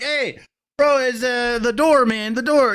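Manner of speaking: exaggerated fake Mexican accent.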